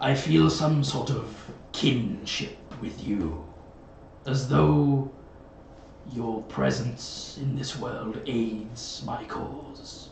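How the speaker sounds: overwhelming, looming crow creature voice. A crow familiar speaks into the druid's mind, in a telepathic crow voice. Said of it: "The crow locks minds with you, and you can hear this voice saying, / and he's referring to the time at which they met. / you specifically feel this overwhelming presence in your head, and you can hear".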